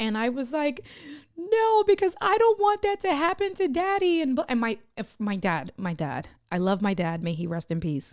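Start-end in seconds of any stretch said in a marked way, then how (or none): 1.4-4.2 put-on, very high, tearful sobbing and bawling. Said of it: "I started bawling, crying".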